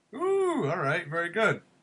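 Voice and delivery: weak, half-hearted put-on character voice, soft. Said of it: "my sad attempt at a Missus Doubtfire impression".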